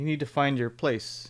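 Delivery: put-on condescending tone. Recapping a scene, quoting a character talking down to Deadpool, mock-condescending. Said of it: "the way he was kind of condescending".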